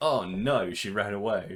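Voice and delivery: mocking killer voice, played for ridicule. Retelling the victim's escape, imitating the killer. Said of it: "the killer's like".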